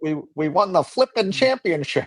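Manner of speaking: high, dorky voice. Retelling a player's interview answer: imitating Fernando Mendoza, dorky. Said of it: "scarily dorky".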